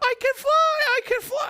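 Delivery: wild, very high, shrill, drawn-out voice. Recalling waking at three hearing Michael's voice, in Michael's crazy high-pitched voice. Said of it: "in this crazy high pitched voice".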